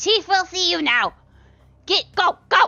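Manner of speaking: small goblin voice, shrill, high, very loud. Game master voicing Slorb, a goblin, pushing the party inward: high-pitched Slorb goblin voice. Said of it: "he is a high pitch, smaller goblin".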